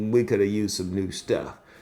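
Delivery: ordinary delivery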